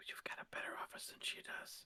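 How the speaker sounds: very quiet, hushed whispered aside. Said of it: "whisper, whisper it".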